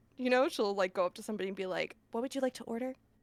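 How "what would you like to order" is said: very quiet, barely audible, hushed voice. Acting out how she goes up to somebody at front of house, quietest voice possible. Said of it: "Just in the quietest voice possible".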